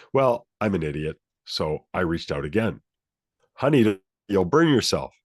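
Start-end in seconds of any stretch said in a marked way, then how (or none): 3.5-5.0 wary tone with a slight edge of tension. Retelling his mom warning him again not to touch it, imitating a little more tense voice. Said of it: "Voice is getting a little more tense".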